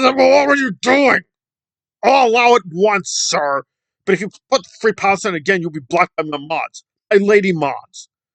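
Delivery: loud, indignant, mock angry scolding. Retelling how Nora answered a chat message: imitating Nora getting angry. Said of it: "and she got angry".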